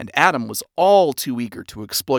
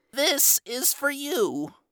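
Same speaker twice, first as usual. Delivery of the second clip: very high, soft, scratchy wheeze; 13 semitones higher, 5 dB quieter than usual. Reading a story, a shrimp hands a man a gift basket, wheezing scratchily. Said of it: "the shrimp wheezed out in a scratchy voice".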